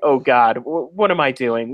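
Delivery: normal talking voice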